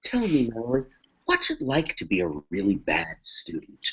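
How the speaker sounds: put-on, patronizing, superior, talking-down tone. Retelling how Alex speaks to Mallory: imitating Alex's condescending tone. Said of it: "very condescending".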